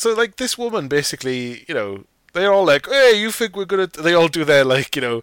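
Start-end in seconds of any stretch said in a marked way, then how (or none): 2.9-4.0 put-on pitched-up Italian-American mobster accent. Speaker acts out how a group of people talk tough; mock Italian-American guy voice. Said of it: "I'm an Italian-American guy".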